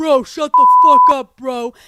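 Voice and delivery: very loud New York yelling, drawn out. Retelling two men fighting behind the speaker: imitating new york yelling. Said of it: "full on New York yelling at each other".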